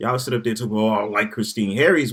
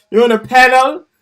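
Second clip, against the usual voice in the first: very high, very loud put-on Caribbean accent; 13 semitones higher, 11 dB louder than usual. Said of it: "she say it like that, 'cause she, that sound real Caribbean".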